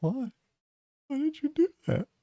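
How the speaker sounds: very high, teary, hurt pleading voice. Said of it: "it just looks at you with like tears".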